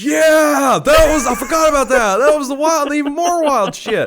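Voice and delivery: high-pitched, loud, excited shout.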